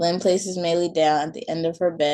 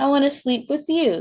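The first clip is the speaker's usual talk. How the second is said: put-on pitched up like a small kid; 8 semitones higher, 4 dB louder than usual. Reading a story, Maylee tells her mom she likes her bed, in Maylee's high-pitched voice. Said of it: "Maylee says in a high-pitched voice".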